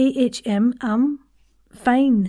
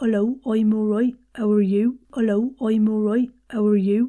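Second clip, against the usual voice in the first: quick West Country accent. Demonstrating to a listener how an accent's vowels sound, West Country accent. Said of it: "For the West Country accent".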